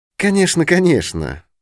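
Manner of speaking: hurried, high-pitched humoring voice. Hastily agreeing with another man's claim, as if to a child or madman. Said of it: "промолвил я поспешно таким тоном, каким обыкновенно говорят с ребенком или с помешанным".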